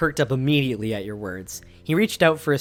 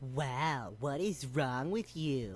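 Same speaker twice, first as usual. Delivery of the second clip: soft, hushed, nasal voice; 14 dB quieter than usual. A character parrots Derek's words back at him: nasally Derek impression. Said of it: "in a nasally voice".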